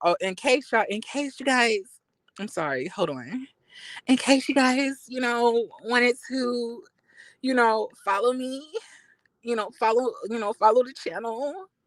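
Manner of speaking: soft, meek, timid victim voice, begging. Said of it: "This is my victim voice".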